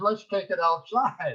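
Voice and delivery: loud shouted yell. Retelling screaming back at John: imitating own past scream. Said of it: "I just screamed back at him".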